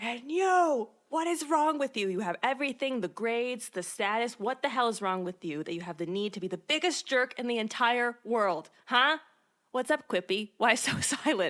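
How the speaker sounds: put-on furious, fully boiling-over rant. Retelling a student telling off a classmate: retelling an angry outburst. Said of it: "That just sets Rory off".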